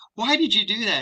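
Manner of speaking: high, sad voice with rising pitch.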